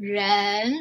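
ren with pitch climbing through it. Tone lesson, praising the student's ren: rising tone on ren. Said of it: "Rising tone".

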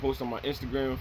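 normal talking voice

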